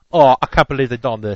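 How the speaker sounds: put-on British accent. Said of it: "in it with a fake British accent".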